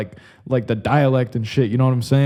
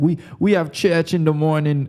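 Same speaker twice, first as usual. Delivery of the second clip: put-on Jamaican accent; 3 semitones higher than usual. Speaker recalls what Glorious and Stephanie said, in a Jamaican-like accent. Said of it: "That's that was like Jamaican".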